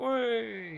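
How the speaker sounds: high, loud, jeering whey cheer.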